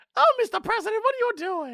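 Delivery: put-on voice flipped way up into Harlem girl voice. Playing a woman calling out to the president, in a Harlem girl voice. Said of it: "That is apparently my Harlem girl voice".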